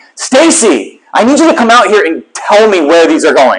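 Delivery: loud, exasperated call. Recounting speaking to her over a running vacuum, retelling a raised voice. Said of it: "my voice is elevated".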